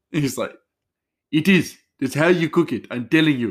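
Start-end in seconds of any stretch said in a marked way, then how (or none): 1.3-3.5 high, loud, bad mock Indian accent. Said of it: "my, um, horrible Indian accent".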